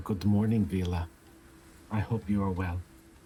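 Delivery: very quiet, gentle speech. Greeting someone in passing while walking by, very softly. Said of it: "very softly".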